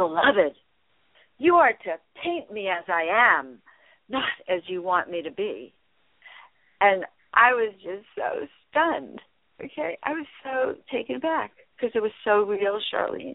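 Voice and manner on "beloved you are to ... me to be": play-acted, gently declaimed proclamation tone. Telling Charlene what a woman said to her, in a very loud voice. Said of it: "in a very, very loud voice".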